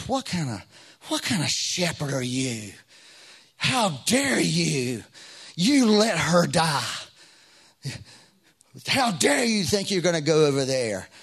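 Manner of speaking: loud, mean, angry scolding voice. Recalling a voice that came to him on the way over, retelling an angry, mean voice. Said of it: "It was an angry voice".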